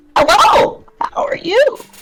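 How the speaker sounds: loud, frog-like creature character voice. A Bullywug walks over to greet the characters; speak in Bullywug creature voice. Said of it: "I can't keep doing that voice".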